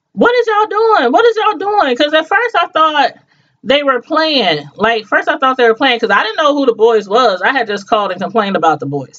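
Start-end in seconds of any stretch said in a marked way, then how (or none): 0.2-2.0 shrill, very high screaming yell. Recounting teenage boys jumping her son in front of her, retelling her own screaming. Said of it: "screaming and yelling like".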